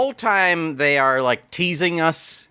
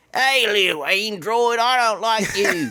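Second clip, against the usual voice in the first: put-on Cockney accent, pitched higher; 5 semitones higher than usual. Describing an anti-robot movie character, doing a Cockney Bjorn impression. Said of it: "more Cockney".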